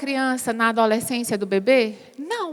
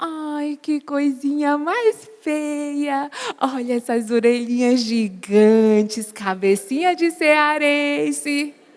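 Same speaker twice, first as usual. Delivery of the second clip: very slow, sweet, tender tone. Showing that a baby reacts only to tone, sweet tender tone. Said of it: "a doçura do meu falar".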